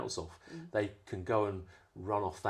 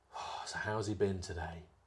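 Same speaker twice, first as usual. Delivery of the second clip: put-on speaking with a big sigh. Imitating parents at pick-up asking about their child: imitating a parent's big sigh. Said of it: "they'll say it with that big sigh".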